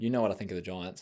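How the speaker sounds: normal talking voice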